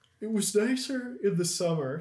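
very high, very loud speech through a yawn. Talking about routines late at night, talking through a yawn. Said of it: "I'm yawning".

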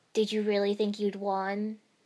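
cold, icy, chilly tone. Neji, having stopped spinning, asks his opponent; coldly. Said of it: "Neji asked coldly".

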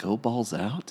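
soft, hushed, half-whispered stage whisper. Recounting what a man said on seeing the speaker's shirt, retelling a half-whisper. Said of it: "kind of like whispered".

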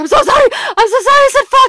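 frantic, apologetic tone, very high-pitched and loud. Retelling screaming a swear in pain as fluid was drawn, re-enacting profuse apologies. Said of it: "I'm apologizing profusely".

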